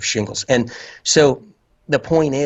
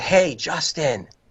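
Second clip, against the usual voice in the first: put-on loud calling, higher pitch; 4 semitones higher than usual. Speaker describes hearing a voice outside the ear, imitating someone calling loudly.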